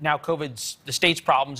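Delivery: normal talking voice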